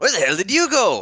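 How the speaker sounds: very loud, high-pitched yelling. A character yells out to a companion who vanished, yelling out. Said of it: "I'm gonna yell out to Priya".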